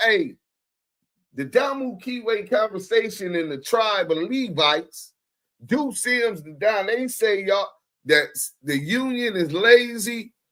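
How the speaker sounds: ordinary talk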